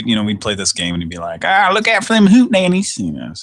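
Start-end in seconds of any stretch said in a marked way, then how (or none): 1.4-3.0 put-on thick country accent, pitched very high. Retelling what a goofy rural kid said while playing Rygar: imitating a kid's heavy rural accent. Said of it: "the heavy accent and stuff".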